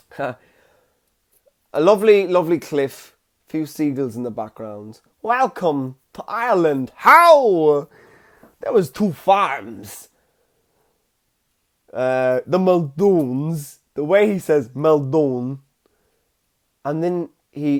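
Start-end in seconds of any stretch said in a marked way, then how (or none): 5.2-13.8 slow mafia voice with drawn-out "How". Imitating the man who opens the film's trailer, on a cliff with seagulls, in a mafia-sounding voice. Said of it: "he sounds like he's in the mafia".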